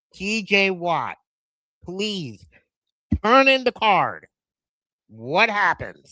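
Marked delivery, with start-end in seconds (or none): 0.2-4.3 loud, raised yelling. Retelling yelling at the TV during a draft pick: retelling own past screaming. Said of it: "I remember screaming at the T V saying".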